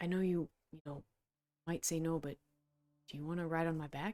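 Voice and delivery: hushed whisper. Character leaning over to a companion in a role-play scene: whispering. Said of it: "just like whisper and say like".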